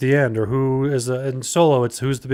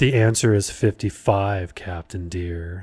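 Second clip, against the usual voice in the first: put-on sultry computer voice, lower pitch; 5 semitones lower than usual. Imitating the Enterprise computer after it was changed: Enterprise computer's sexy voice. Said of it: "they changed it to be like".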